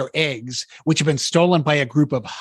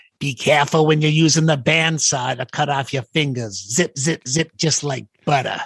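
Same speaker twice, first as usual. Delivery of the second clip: Boston accent impression. Quoting a seventh grade shop teacher's bandsaw warning: imitating a boston accent. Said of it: "who had a Boston accent".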